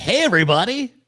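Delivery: mock excited voice. Explaining an earlier facial expression: imitating own excited greeting. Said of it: "that was excitement".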